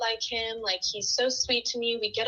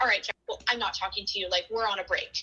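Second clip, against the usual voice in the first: put-on upset, outburst-like delivery; 2 semitones lower than usual. Retelling how a friend reacted to her boyfriend: imitating someone upset. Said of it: "she would get upset about something".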